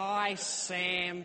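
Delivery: high, loud mock New Zealand accent. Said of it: "mock me for my New Zealand accent".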